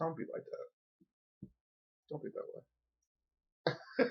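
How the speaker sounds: slow, hushed, breathy mock-hurt whisper.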